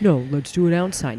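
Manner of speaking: ordinary delivery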